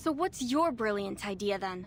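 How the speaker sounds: acted exasperated tone. Retelling a woman's words during a group task: retelling her exasperated line. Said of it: "her tone becomes exasperated".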